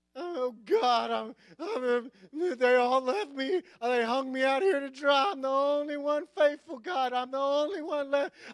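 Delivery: high, whiny, complaining tone. A reader acting out a complaining passage aloud, mock-whiny complaining. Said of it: "I can't hardly read it without actually taking on that tone".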